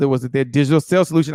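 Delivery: said very fast, rattled off.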